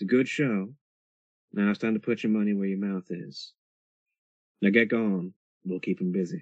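hushed quiet whisper. Someone leans in so only you can hear, with cameras everywhere, quiet whisper. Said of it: "And they say quietly to you".

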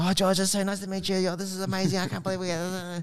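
put-on high voice of a five-year-old girl. Retelling meeting a sparring partner before the rounds, like a five-year-old girl. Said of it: "like this five-year-old girl just going".

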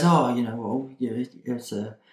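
soft, slow, halting, hesitant delivery. Retelling a hero's answer to an awkward question: imitating hesitant speech. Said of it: "a little bit of hesitation in his voice".

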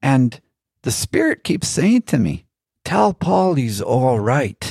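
bad put-on Irish accent. Quoting a man's feedback to the speaker, in a bad Irish accent. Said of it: "I'm not doing a very good Irish accent".

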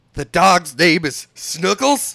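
put-on furious yelling. Retelling the Casey Kasem story where he yells: imitating Casey Kasem yelling. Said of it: "he just, like, fucking yells".

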